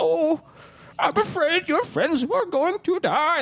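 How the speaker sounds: heavily sarcastic delivery, pitched very high. Praising a favorite end sequence, quoting the villain with a super sarcastic Emperor impression. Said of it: "Like super sarcastic".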